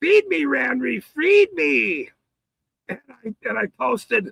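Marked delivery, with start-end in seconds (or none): 0.0-2.1 yowling, screaming cat voice. Retelling a video where a hungry cat begs for food: imitating a screaming cat. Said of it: "the cat kept screaming".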